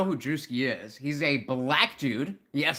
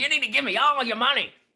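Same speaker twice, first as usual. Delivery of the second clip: preachy, high-pitched sermon voice; 10 semitones higher, 4 dB louder than usual. Retelling a comedian's viral bit, acting like a megachurch pastor. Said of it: "like a megachurch pastor".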